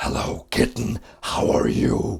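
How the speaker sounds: slow, rough, creaky, chilling demonic voice. Imitating how a friend talks to cats: put-on demonic voice. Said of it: "he did his voice, which was even more demonic".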